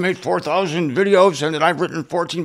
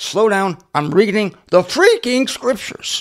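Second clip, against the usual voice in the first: excited voice, cracking and swooping in pitch; 3 semitones higher than usual. Reading scripture aloud to viewers, getting excited, voice cracking. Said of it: "My voice cracked because I was excited".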